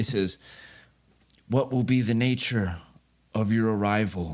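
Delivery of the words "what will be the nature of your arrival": distant, echoing voice, as if from far down a hallway. A narrator voices what the listeners hear say this, voice sounding far away. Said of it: "sounds like it's being spoken from really far away".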